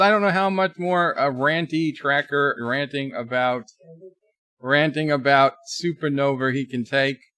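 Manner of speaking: normal talking voice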